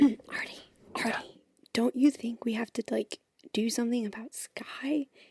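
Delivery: hushed whisper. A player character turns to a companion, whispering. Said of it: "I whisper to Artie".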